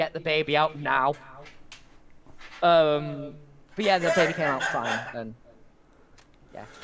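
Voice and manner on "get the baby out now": plain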